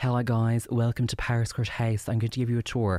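put-on very posh Irish woman's voice. Imitating the tour guide at Powerscourt House: very posh Irish accent. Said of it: "very posh Irish".

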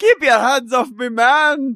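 put-on Newfoundland accent, very high and loud. Echoing another speaker's imitation of a woman from Newfoundland, in a put-on Scottish-sounding accent. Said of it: "She's from Newfoundland".

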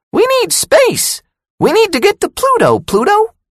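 very high, squeaky, swooping mouse voice. She teases him by imitating the cartoon mouse: squeaky Mickey voice. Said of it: "She squeaked her voice like the mouse in the cartoon".

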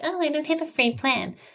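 high, mocking complaining voice.

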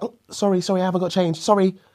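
very high-pitched, over-polite, apologetic delivery. Retelling a girl turning someone down: imitating a girl apologizing. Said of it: "she's like".

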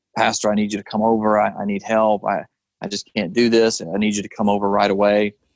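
acted-out heavy, tearful crying. A pastor retells a church member's phone call, imitating someone crying. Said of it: "she was just crying so heavily".

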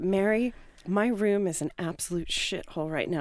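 ordinary delivery

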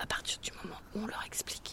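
soft unvoiced whisper.

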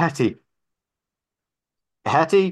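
gasping, breathless shout, very high and very loud. Rounding a corner into an alleyway, calling out for Hetty, breathless yelling. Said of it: "I'm yelling in what very little breath".

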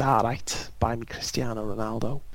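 put-on accent, drifting slightly Welsh. Recalling a podcast impression of Wayne Rooney: Wayne Rooney impression, slightly Welsh. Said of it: "my impression of Wayne Rooney, like when he went".

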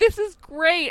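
really excited gushing delivery.

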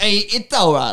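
put-on New York accent. Joking about a TV host having the Joey accent, doing the Joey accent. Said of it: "had like the Joey accent".

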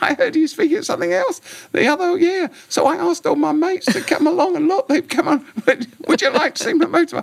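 little squeaky voice, very high-pitched. Retelling what a man said to them, in a high-pitched squeaky voice. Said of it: "in this high-pitched voice".

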